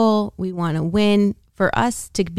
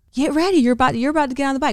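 high-pitched, screaming voice; 7 semitones higher than usual. Retelling how the other speaker acted during a workout: imitating someone screaming. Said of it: "He's screaming at me".

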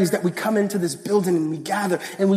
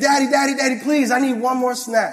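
put-on child pleading voice, higher; 4 semitones higher than usual. Retelling the daughter asking for one more snack: imitating his daughter begging. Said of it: "then she was like".

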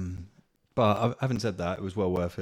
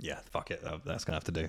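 plain

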